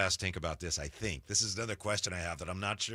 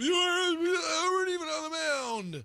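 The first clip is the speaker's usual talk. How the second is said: very high, shrill, mocking heckling jab; 4 dB louder than usual. Retelling what people say to first-pitch throwers, imitating people heckling. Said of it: "That's a good impression of people".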